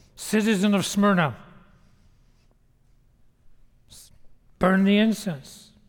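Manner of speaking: acted, hardened, firmer, insistent tone. Retelling a magistrate repeating his order, imitating a firmer voice. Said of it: "this time his voice getting firmer".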